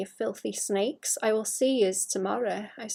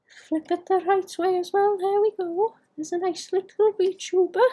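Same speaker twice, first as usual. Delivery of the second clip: terrible, loud, high, fake put-on Welsh accent; 7 semitones higher, 5 dB louder than usual. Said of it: "I've gotta stop doing that Welsh voice".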